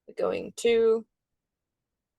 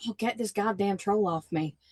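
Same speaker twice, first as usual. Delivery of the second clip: normal talking voice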